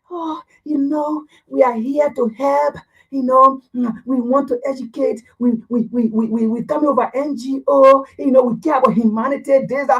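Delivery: put-on soft-spoken, gentle manner of speech. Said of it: "the man who come and speak to you softly".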